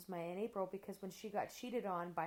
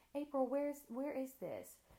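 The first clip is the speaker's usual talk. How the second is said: mock very sweet voice, much higher pitch; 6 semitones higher than usual. Retelling her mom asking a question in the kitchen, imitating mom's very sweet voice. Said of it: "my mom has the sweetest voice".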